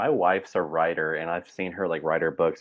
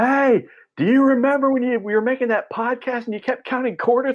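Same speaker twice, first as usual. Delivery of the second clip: very high yell carried across a distance; 4 dB louder than usual. Picturing someone at the very back of a plane, imagined yell from far back. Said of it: "you're way in the back yelling like".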